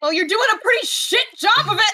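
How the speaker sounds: very high, loud, all-out yell. A player character answers a woman's voice over the loudspeakers, yelling. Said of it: "I yell".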